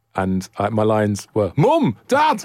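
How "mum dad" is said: put-on very high, failed northern English accent. Recalling their lines from a sketch show years ago, bad northern accent. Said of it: "I had to do a northern accent in it".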